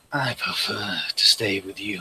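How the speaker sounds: soft whisper close to the ear. Voicing a sword that whispers in the listener's ear, a whispering sword voice. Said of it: "hear like a whisper in your ear".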